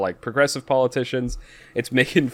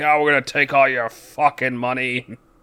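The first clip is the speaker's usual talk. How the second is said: put-on slurred, drunken, boasting voice. Retelling a drunk party member at a game's press conference, imitating drunk slurring. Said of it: "he's slurring".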